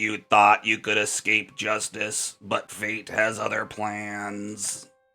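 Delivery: drawn-out, droning, robotic machine monotone. A woman at the back of the cart speaks through her voice box, robotic monotone. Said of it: "her voice robotic and monotone".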